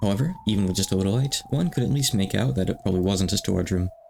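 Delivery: ordinary delivery, nothing marked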